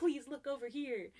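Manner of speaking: put-on, frantic, panicked, freaked-out voice. Retelling a woman waving her arms to get a man's attention, imitating her freaking out. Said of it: "she starts freaking out".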